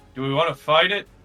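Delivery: calling out very loudly. Calling out in character to the group: shouting to the group. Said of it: "I'm going to shout to the group".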